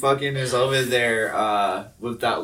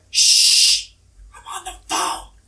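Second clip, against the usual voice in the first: put-on loud, slow little girl's shushing; 6 dB louder than usual. Retelling a little girl turning around to shush: imitating a little girl shushing. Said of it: "the little shit turns around and she's like".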